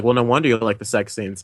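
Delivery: ordinary delivery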